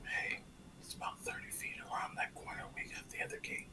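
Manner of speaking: soft unvoiced whisper. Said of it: "just kind of whisper to them".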